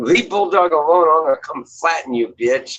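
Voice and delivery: high, menacing, tough-talking, ready-to-fight voice. Imagining what the viewer would say to Joanna: imitating Bridget threatening. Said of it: "She'd be like".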